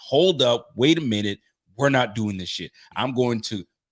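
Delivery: normal talking voice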